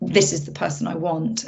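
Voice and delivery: ordinary talk, nothing marked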